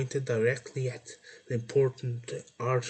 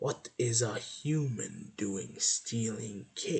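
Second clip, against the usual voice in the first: hissed, hissing voice; 2 semitones lower, 4 dB quieter than usual. Narrating a story, the cake's baker confronting a human taking her cake, hissing the question. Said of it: "she hissed the question at me".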